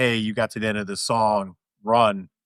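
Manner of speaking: ordinary talk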